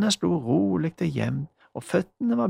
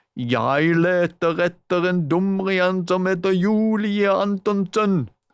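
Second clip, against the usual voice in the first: gruff, drawn-out, loud shout; 5 dB louder than usual. Magda, playing a creature in the forest, calls out for Julie: shouting in a gruff voice. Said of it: "ropte det inne fra skogen".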